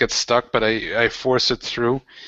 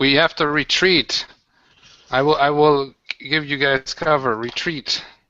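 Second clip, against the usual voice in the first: acted, fighter's knight-like battle call; 3 semitones higher than usual. Playing a character ordering friends to retreat during a zombie fight: yelling in character. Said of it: "I'm yelling".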